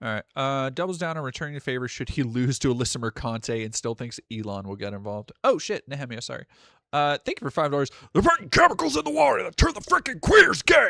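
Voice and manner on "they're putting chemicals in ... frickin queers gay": very high, loud, rough, raspy voice. Reading a donation message aloud, then doing the nightly Alex Jones voice. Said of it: "nightly Alex Jones voice".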